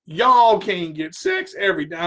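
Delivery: cracking voice. Giving relationship advice to men and women, voice cracking. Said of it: "My voice just cracked".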